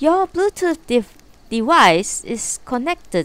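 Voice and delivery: very exaggerated Chinese accent.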